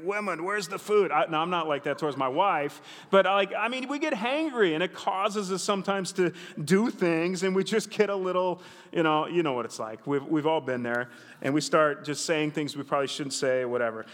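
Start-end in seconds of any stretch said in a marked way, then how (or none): 0.0-1.1 put-on grumpy, cranky cartoon dad voice. Joking about coming home hangry from church: Fred Flintstone voice. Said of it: "I'm kinda like Fred Flintstone".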